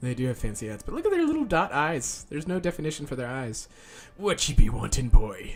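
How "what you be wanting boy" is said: put-on pirate voice, louder. Voicing a game character while streaming to chat, piratey voice. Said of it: "This is my piratey voice".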